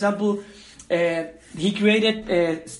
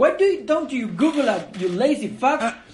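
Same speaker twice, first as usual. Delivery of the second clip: put-on sassy nanny voice; 4 semitones higher than usual. Retelling a bit where Maria answers the driving guy, Maria voice with attitude. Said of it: "a nanny, but with an attitude".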